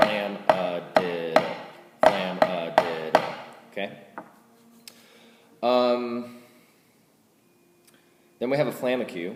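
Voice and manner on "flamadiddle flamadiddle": very slow, drawn-out flamadiddle. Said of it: "You just put a flam at the beginning".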